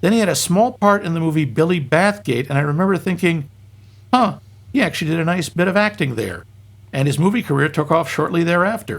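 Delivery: plain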